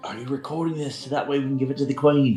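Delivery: whispering in a put-on voice. Voicing a character who leans over to ask a companion: whispering in character. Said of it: "Garon kinda whispers over to Sasha".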